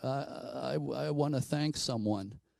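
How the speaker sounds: put-on very slow, faltering, stumbling, halting old woman voice. Retelling a woman who seemed to channel something, in a halting old woman's voice. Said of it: "speaking in an old woman's voice".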